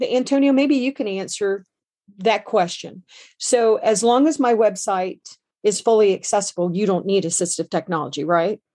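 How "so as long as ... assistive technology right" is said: ordinary delivery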